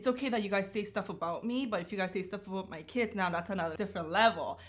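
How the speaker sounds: plain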